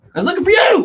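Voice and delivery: loud, angry, very high retort. Retelling how she answered on waking: imitating an angry reply. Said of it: "she reacts angrily".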